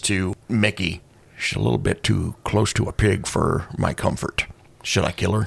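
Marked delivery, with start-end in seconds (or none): 1.4-5.5 low, soft, leaning-in whisper. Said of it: "leans in and whispers".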